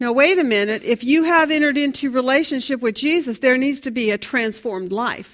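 ordinary talk

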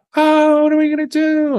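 very high, screamed-out, crying voice. Retelling what a nine-year-old reported saying, imitating him screaming. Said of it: "and he was screaming".

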